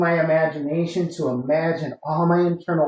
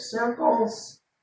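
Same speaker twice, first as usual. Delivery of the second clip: voice cracking mid-line; 6 semitones higher, 5 dB quieter than usual. Instructor guiding a class through a stretch, voice cracking. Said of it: "I'm not sure why my voice cracked right there".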